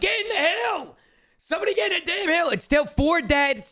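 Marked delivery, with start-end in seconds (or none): 0.0-2.5 pitched-up, acted-out yell. Reviewing a match, the speaker reenacts how he yelled at teammates, retelling his own yell. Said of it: "right here I'm yelling".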